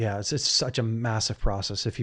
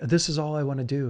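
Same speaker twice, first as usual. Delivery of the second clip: put-on tearful, crying voice, higher pitch; 4 semitones higher than usual. Retelling his partner's words while she was crying: imitating someone crying. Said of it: "she was crying".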